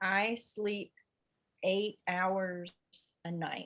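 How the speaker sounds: read really slowly. During a reading exercise, the line is read again, really slowly. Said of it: "really slowly".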